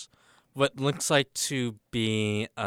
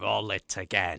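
put-on sinister emperor voice; 2 semitones lower than usual. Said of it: "said in his, uh, Palpatine voice".

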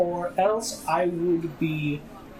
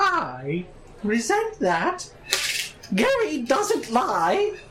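high put-on storybook-style character voice, pitch raised; 6 semitones higher than usual. A roleplayer's character, accused of lying about credits, answers in a Dobby voice. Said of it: "I'm turning into Dobby".

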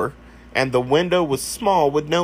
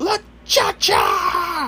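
very high-pitched, shrill, alarmed yell. Recalling pointing at the corner and yelling, retelling a yell. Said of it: "point at the corner and yell".

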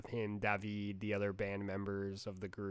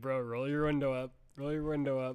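mock frustrated, repeated hollering; 4 semitones higher, 4 dB louder than usual. Retelling yelling at the tv during a car wash scene: retelling own yelling. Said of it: "I was yelling at the T V like".

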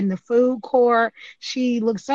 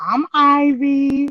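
confident, self-assured delivery, higher and louder; 4 semitones higher, 5 dB louder than usual. Retelling a story where she introduces herself to a staring guy: imitating a confident introduction. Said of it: "with all the confident, confidence in the world".

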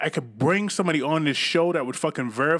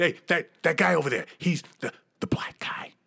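put-on whisper. Mimicking how people point out someone in a crowd, imitating someone whispering. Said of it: "like they whisper that".

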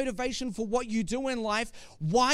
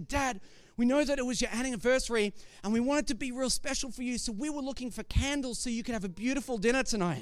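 normal talking voice

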